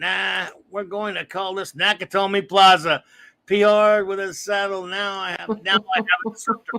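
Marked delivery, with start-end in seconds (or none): none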